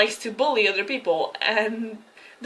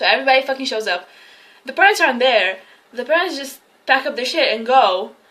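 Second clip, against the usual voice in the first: ordinary delivery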